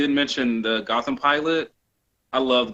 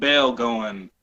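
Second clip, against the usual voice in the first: ordinary delivery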